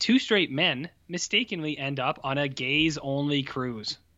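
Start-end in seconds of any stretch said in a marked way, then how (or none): none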